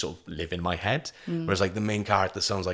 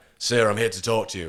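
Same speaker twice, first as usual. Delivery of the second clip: put-on northern English accent. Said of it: "a northern accent like that".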